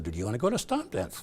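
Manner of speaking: normal talking voice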